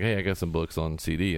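ordinary delivery

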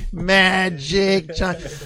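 put-on New England twang, "Magic" drawn out. Recalling someone calling out behind him in a hotel, new england twang. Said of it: "in the New England twang".

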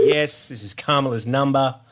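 ordinary talk

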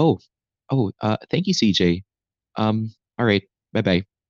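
put-on hushed subdued voice. Recalling taking a phone call with good news mid-game, retelling talking very quietly. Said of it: "I'm very quiet".

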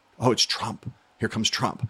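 put-on mutter under the breath. Recalling reporters seeing a helicopter arrive at the Iowa State Fair: mock muttering under breath. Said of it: "kind of muttering under their breath".

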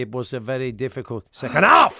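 low, loud, accentuated words. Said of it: "he accentuates certain words".

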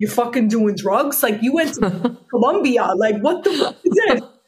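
put-on New York Bronx accent. Retelling his reaction to hearing about the psychoactive plant, in a put-on Bronx accent. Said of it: "with his cute Bronx accent".

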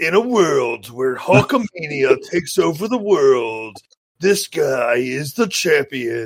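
slow, dramatic, epic movie trailer narrator voice. Showing the other speaker how to do it, movie trailer voice. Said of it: "do your trailer voice".

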